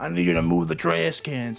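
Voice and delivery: put-on New York accent. Retelling what mom asked, imitating mom's New York accent. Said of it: "My mom sounds like a New Yorker".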